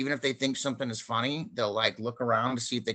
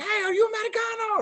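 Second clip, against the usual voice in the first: very high-pitched, shrill yelling; 3 dB louder than usual. Retelling a scene in a little cafe, imitating another man yelling. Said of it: "he was like yelling to him".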